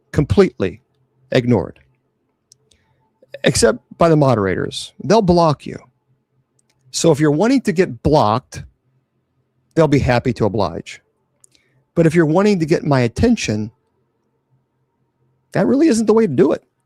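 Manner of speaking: slow, deliberate, unhurried, word-by-word delivery. Addressing trolls in the comments: deliberately speaking slower. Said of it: "I gotta go slower".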